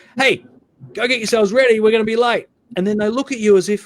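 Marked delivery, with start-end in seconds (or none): 0.1-2.4 mock urgent, rushed yelling. Retelling calling the kids away from the television again: imitating own yelling. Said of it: "You go zero to a hundred".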